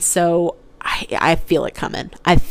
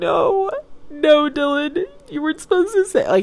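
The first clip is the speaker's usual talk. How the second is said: mock crying breakdown, very high-pitched, losing control; 10 semitones higher than usual. Speaker retells reacting to Dylan in the car, retelling crying. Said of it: "And I start crying".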